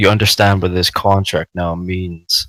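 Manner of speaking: hushed, quiet, low-volume, said in close. After a handshake sealing a contract, a player's character asks her, speaking quite quietly. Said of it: "I say to her quite quietly".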